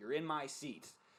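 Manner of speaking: thick, heavy put-on Boston accent. Retelling a woman on the bus stopping at the speaker's seat, thick Boston accent. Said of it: "in a thick Boston accent goes".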